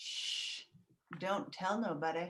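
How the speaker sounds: slow, drawn-out hushed voice. Speaker doing a run of impressions, now the Virgin Mary: Virgin Mary impression. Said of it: "This is my impression of the Virgin Mary".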